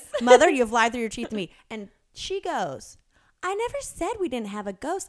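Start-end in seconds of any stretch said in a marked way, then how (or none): 0.2-1.5 mock-serious, loud, fast, stern scolding tone. Speaker retells confronting their mom about a ghost, retelling a mean-business scolding. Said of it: "you mean business".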